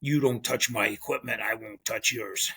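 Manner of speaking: mock stern, low, dead-serious, deadpan delivery. Retelling a fishing partner's refusal to share gear: imitating a serious tone. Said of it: "He looked at me real serious".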